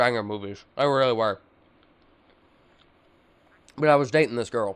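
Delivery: muffled speech with food in mouth. Reminiscing aloud while eating, talking with mouth full. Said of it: "I'm gonna be talking with food in my mouth".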